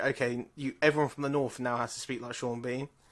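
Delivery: plain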